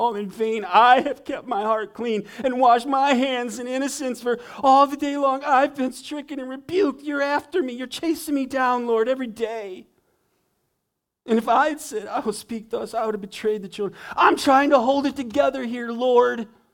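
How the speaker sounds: mock, very high, loud, put-upon whining complaint. Reading out the writer's complaint to the Lord for listeners, mock-whining. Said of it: "You can hear the whining".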